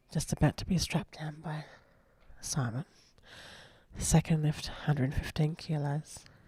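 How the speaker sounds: hushed whisper. Commentating a quiet lift, whispering so as not to distract the lifters: whispering. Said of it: "whisper into this microphone now".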